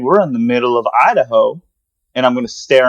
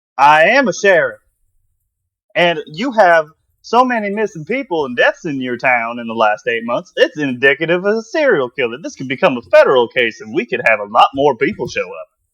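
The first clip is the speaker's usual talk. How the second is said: put-on southern American accent; 2 semitones higher than usual. Playing a sheriff answering someone threatening to call the sheriff: fake southern accent. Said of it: "you changed your accent now you took a southern".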